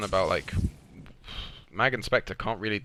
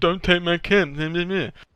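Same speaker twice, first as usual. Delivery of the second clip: high, slow, drawn-out, loud mock yell. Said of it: "they just shout at me".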